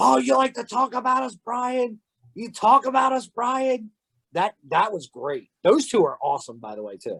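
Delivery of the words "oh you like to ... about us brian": acted-out very high, shrill screaming. Retelling two people coming out after a match, imitating someone screaming. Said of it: "started screaming".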